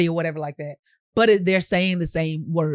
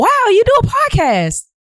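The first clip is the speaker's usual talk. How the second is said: very high, bright, thrilled, delighted exclaim; 6 dB louder than usual. Demonstrating emotions for a podcast take, now happy: happy. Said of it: "so now happy".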